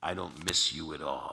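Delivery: slow, close, intimate half-whisper. Retelling how Don grabbed his head in a restaurant: imitating a half-whisper. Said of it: "sotto voce just grabs my head and whispers in my ear".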